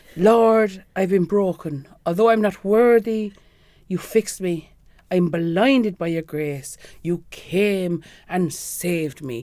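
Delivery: put-on cute, slow, little Irish priest accent. Retelling a priest's talk to the girls, in Father John's cute Irish accent. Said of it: "him just in that sort of cute little in Irish accent".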